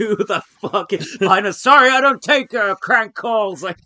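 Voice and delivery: shrill, very high, very loud dismissive outburst. Retelling the president's reaction to a call: imitating Joe Biden. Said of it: "Because Biden was obviously like".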